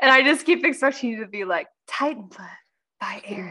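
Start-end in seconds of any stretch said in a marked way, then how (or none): 1.9-3.5 soft, breathy fragrance-commercial voice. Imitating how the listener always reads aloud, in a breathy perfume ad voice. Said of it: "in like this breathy perfume ad voice".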